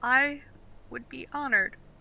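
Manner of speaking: teary, choked-up voice on verge of tears. Asked to carry a player's tower shield, he answers teary, choked up. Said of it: "kind of tear up a little bit".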